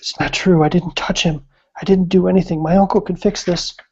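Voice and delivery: close, confiding stage whisper. Voicing a creature leaning over a player character: whispering in character. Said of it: "she leans over and whispers in your ear".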